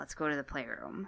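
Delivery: put-on whisper. Retelling what someone whispered on the dance floor: imitating a whisper. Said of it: "I hear a whisper".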